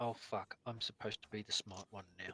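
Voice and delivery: hushed, very low, quiet grumbling mutter to oneself. Repeating a character's line for the other players, muttering under his breath. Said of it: "Zouston mutters under his breath".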